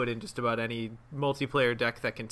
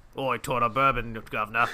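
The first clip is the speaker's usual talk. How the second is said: put-on Cockney, low, deep and loud; 5 dB louder than usual. Imagining Wendy sidling up to an investigator with a flask: low deep Cockney voice. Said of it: "a low, deep Cockney voice".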